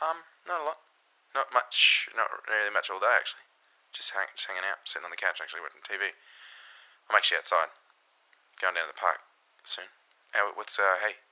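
acted voice as if in the middle of sex. Acting out answering a phone call in the middle of sex: playing someone mid-sex on phone. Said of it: "you play the part of someone with a dick inside them".

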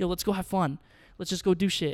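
normal talking voice

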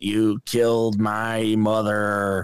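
low, very slow, dragged-out, weird delivery. Retelling a movie scene again, imitating the Mandarin from Iron Man three. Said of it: "sounds like he's doing the Mandarin from Iron Man three".

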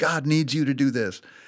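barking drill sergeant voice. Retelling a volunteer leader on a mountain hike: imitating someone yelling. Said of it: "sitting there yelling at kids".

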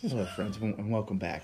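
hushed gentle announcer delivery. Repeating the golf announcer's greeting: soft quiet Jim Nantz voice. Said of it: "soft, quiet tone like N P R or like our good friend".

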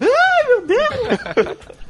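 put-on very high, shrill, half-girlish, panicked, desperate shriek. A game master voices an intimidated giant bearded man screaming: high, girlish desperate scream. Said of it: "solta um grito meio agudo, meio menina".

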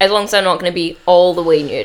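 ordinary talk

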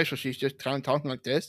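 soft, mumbly put-on voice, mouth barely open. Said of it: "her mouth doesn't open all the way".

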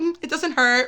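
plain

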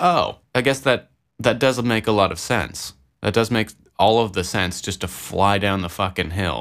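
ordinary delivery

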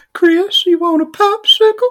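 very high-pitched cartoon old-man voice. Telling a story about a son's birthday, in a Herbert from Family Guy voice. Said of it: "you're doing Herbert from Family Guy".

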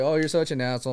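normal talking voice

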